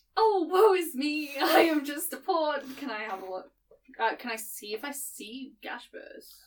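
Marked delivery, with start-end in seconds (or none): 0.2-2.6 overacted damsel in distress voice, high and very loud. Calling out in character while walking the street: hammy damsel in distress voice. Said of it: "almost Hammy rendition of, like, a old, like, damsel in distress".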